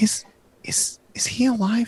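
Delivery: very slow, halting, high-pitched whisper. Voicing a girl peeking from the covers at a player: whispering girl character. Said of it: "whispers to you".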